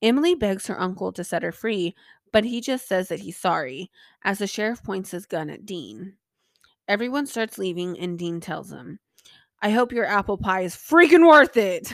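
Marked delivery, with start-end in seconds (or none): 9.6-11.9 very loud, sarcastic, snarky shout. Recapping an episode scene as Dean speaks to the leaving crowd, mock-snarky Dean impression. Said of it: "Dean's snarky-ass comments".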